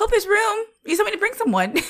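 very high, breezy, oblivious, totally unbothered chirp. Retelling what Terry says about bringing him: imitating Terry. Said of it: "Terry, no".

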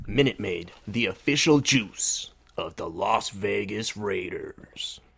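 very slow, drawn-out put-on announcer voice. Reading a juice sponsor line on a podcast: put-on announcer voice. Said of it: "How do you like my announcer voice?".

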